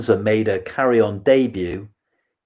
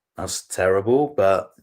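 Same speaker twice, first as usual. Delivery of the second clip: normal talking voice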